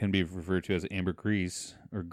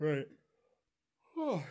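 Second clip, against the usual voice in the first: words pushed through a yawn, pitched up; 8 semitones higher, 5 dB quieter than usual. Responding in a conversation while still yawning. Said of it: "I'm still yawning".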